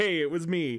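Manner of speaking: usual speaking voice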